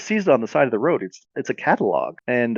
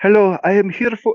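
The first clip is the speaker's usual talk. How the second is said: heavy put-on Eastern European accent, pitched up; 8 semitones higher, 4 dB louder than usual. Retelling a story, the speaker voices the woman in a bear suit in a thick eastern european accent. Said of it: "she says in a thick European accent".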